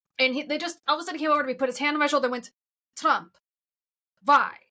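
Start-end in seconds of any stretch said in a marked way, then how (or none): 3.0-4.5 put-on Russian accent. Retelling what a man asked after learning the speaker was american, russian accent. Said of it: "I don't know why I made him Russian".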